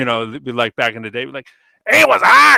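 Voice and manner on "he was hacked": belted-out, high, loud broadcaster voice. Giving a tagline example, imitating Johnny Most.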